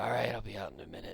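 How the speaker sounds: groggy, creaky, rough-edged, half-asleep voice. Voicing a character in a tent who drags himself awake after a sigh: dragging himself awake. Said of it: "he drags himself awake".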